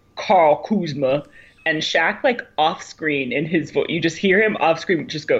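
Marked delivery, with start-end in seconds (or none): 0.2-1.3 name mispronounced. Retelling a TV moment: imitating Charles Barkley. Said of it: "Charles Barkley just goes".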